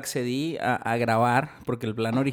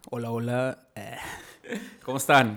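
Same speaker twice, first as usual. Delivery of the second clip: slow, clumsy, put-on radio announcer voice. Introducing oneself on a podcast: attempted radio announcer voice. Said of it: "Quise ser voz de locutor, fail".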